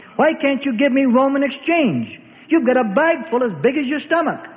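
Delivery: bellowing, high, roaring, exploding outburst. Narrating a foreign merchant arguing with the temple banker over exchange, roaring. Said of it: "the foreign merchant roars".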